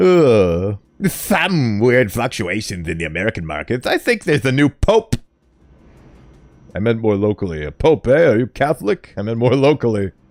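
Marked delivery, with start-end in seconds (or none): 0.0-3.9 low, put-on nerdy voice, drawn-out uh. Voicing a guy they decided deserves the nerd voice: nerd voice. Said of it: "Is that a nerd voice?".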